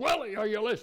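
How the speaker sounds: loud preacher's bellow. Retelling what was called out to Willie from the gravesite before a crowd, Ian Paisley bellow. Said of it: "Ian Paisley bellowed".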